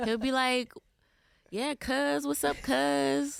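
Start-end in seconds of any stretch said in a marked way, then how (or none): 1.5-3.4 very high, rough, creaky dad voice, "cuz" drawn out. Doing an impersonation of her dad when asked: imitating her dad saying cuz. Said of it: "give us the best impersonation of your dad".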